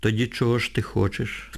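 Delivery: plain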